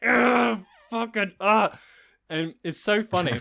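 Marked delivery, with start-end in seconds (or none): 0.0-1.8 pained, high, loud yelling. Retelling getting an injection while holding a hand: imitating own past yell of pain. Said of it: "but I'm just yelling".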